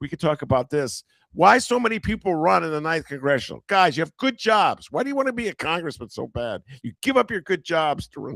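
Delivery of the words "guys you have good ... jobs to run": fatherly, dad-like scolding lecture tone. A commentator addresses congressional candidates directly, like someone's father scolding. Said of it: "I sound like someone's father".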